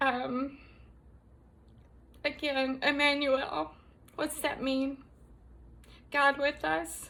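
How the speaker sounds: holding back tears. Addressing DoorDash drivers, the speaker goes on, trying not to cry. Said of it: "I'm trying not to cry again".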